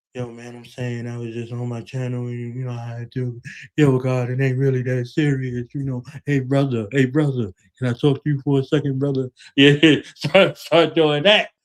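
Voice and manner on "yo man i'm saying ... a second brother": put-on meek, very not tough voice. Describing online tough talkers backing down, imitating them: imitating a meek, not-tough tone. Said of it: "to real model tone and very not tough".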